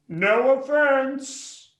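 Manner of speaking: very high-pitched, loud shouting yell. Repeating the yelled line after being told louder: louder yelling.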